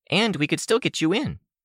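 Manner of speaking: all cheer, bright enthusiasm, very high pitch. Reading a character's hopeful offer aloud: cheerful and enthusiastic. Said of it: "all cheer and enthusiasm".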